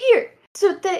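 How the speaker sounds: very high, loud earnest comforting voice. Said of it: "and it's like".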